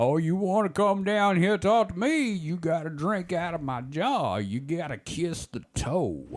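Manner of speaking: put-on very slow, high-pitched old-timey prospector voice. Pitching a film scene, voicing the prospector with the goblin arm: old-timey prospector voice. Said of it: "the old-timey prospector guy who has the pickled goblin arm".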